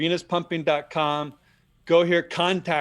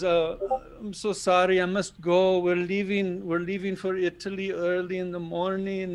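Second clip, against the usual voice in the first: heavy put-on continental European accent, laid on thick; 3 semitones higher than usual. Retelling what a woman with an accent said when leaving, put-on thick european accent. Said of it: "she had this thick, like European accent".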